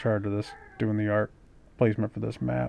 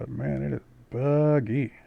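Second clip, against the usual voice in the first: ordinary talk, nothing marked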